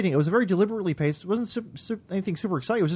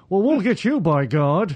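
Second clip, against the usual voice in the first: put-on upper-class lockjaw voice, louder; 4 dB louder than usual. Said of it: "like the rich".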